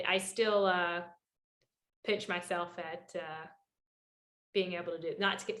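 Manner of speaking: overcome with emotion, choked voice. Race reporter recalling how he got his start: getting emotional. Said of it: "sorry, I'm getting emotional".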